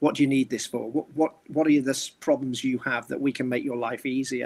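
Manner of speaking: ordinary talk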